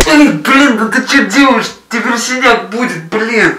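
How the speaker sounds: shouting. In a scene, shouting at a sister. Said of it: "А ты не кричи на сестру!".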